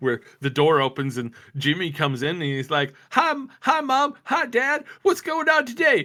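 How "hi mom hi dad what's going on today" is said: put-on very high, squeaky-clean, wholesome sitcom kid voice. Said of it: "like super family friendly comedy thing".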